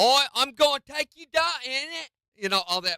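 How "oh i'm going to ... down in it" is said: fake British tough-guy accent, very high and loud. Reviewing a British action movie, the speaker mocks its thugs in a fake British thug accent. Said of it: "British thugs always sound fake".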